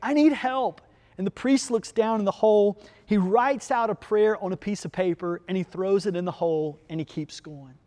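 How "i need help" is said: high-pitched, pleading yell. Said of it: "the man yells from the hole".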